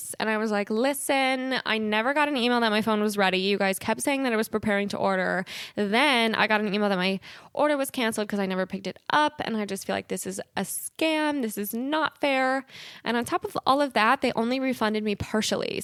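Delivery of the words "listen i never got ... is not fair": normal talking voice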